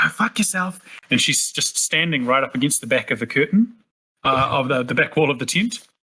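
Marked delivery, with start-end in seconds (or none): 0.0-0.8 whispered in a much higher pitch. Narrating a game scene inside a tent, Mira's whisper. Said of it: "you hear Mira just whisper".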